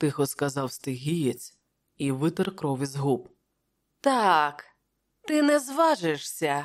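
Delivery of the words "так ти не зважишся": haughty, self-satisfied, smug and arrogant retort. Askalante answers the Stygian: arrogant, smiling. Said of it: "усміхнувся Аскаланте зарозуміло".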